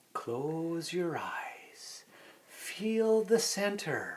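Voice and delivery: soothing, unhurried, slow, soft meditation-style voice. Describing a meditation app's narrators, imitating their slow calming voice. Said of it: "Very slow and calming".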